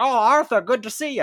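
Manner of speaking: clumsy put-on Irish accent, loud and high. Describing a game, the speaker quotes a character greeting the player: bad Irish accent. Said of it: "He's Irish, so pretend that accent was good".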